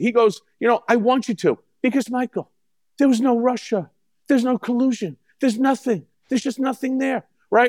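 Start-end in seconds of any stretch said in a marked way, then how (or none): 0.6-7.2 coaxing gangster-style talk, higher. Retelling what Donald said in the Oval Office: imitating Donald Trump's voice. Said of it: "your version of Trump's voice".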